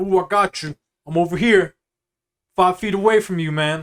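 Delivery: loud, pushy, overfamiliar salesman voice. Acting out a hovering Foot Locker employee greeting a customer: imitating a pushy shoe salesman. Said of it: "that exact impression is what bothers me".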